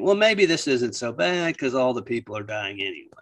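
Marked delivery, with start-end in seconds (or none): none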